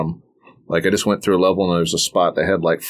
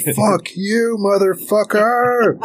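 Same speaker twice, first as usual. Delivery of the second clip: very high, shrill, shrieked shout. Retelling the moment they finally beat a game boss, re-enacting a shout. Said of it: "I shouted".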